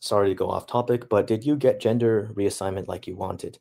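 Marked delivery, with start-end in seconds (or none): none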